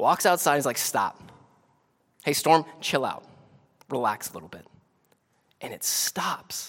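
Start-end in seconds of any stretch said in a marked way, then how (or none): 0.8-4.6 play-acted easygoing, calm, totally at ease. Retelling the storm story as Jesus is woken: calm Jesus voice. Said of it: "I love Jesus just so calm".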